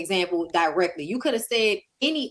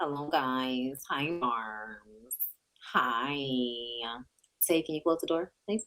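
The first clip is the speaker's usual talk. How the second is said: very low, very slow, deep chatty drawl; 7 semitones lower, 9 dB quieter than usual. Retelling a funny TikTok where someone pretends to be Nikki: imitating Nikki. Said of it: "pretending to be Nikki".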